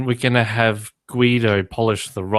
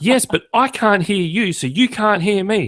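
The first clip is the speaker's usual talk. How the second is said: put-on very high, slow, drawn-out child's yell; 10 semitones higher than usual. Retelling what a child with headphones said to his mother: imitating a child yelling. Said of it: "he's yelling at my wife".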